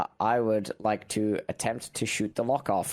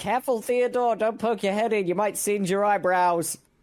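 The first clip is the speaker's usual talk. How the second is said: very high, loud, shrill yelled call. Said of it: "and yell".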